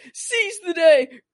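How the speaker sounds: screaming, high and loud.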